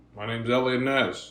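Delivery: flat monotone delivery with no lift. Mocking an actor's delivery in The Untouchables: monotone Kevin Costner impression. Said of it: "very monotone".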